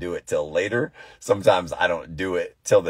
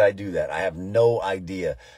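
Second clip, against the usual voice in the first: normal talking voice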